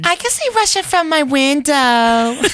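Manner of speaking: put-on very high, piping little kid voice, like a six-year-old. Asked to do a 6-year-old doing Sarah Palin: 6-year-old doing Sarah Palin. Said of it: "You as 6-year-old doing Sarah Palin".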